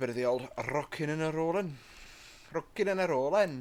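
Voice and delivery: sudden put-on Welsh accent. Pulling away from the platform, suddenly slipping into a Welsh accent. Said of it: "I've got a Welsh accent all of a sudden".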